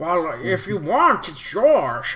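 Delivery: put-on old man voice. Voicing a short, old, wrinkly man sitting by a vehicle: old man NPC voice. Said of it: "His voice just changed really quick".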